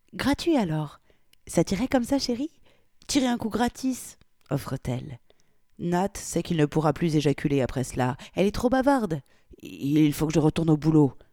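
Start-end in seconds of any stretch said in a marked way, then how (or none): 9.6-11.1 muttered, mumbling. A man answers a talkative woman, muttering.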